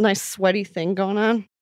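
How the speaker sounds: normal talking voice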